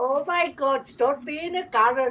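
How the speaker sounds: put-on Greek accent. Answering the Karen-or-Darren question, in a Greek accent. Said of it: "Was that your Greek accent?".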